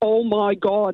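put-on Derry accent laid on heavy. Acting out your cousin from Northern Ireland coming out of the other toilet, in a really thick Derry accent. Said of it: "in a really thick Derry accent".

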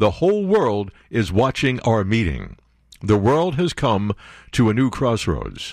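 normal talking voice

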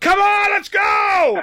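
very high, very slow, drawn-out energetic shout. Retelling sitting beside Mister Golf at a football game: imitating Mister Golf yelling. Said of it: "he's got that energy in his voice".

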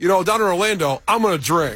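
ordinary delivery

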